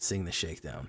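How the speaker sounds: flat, falling tone. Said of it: "what does that mean?".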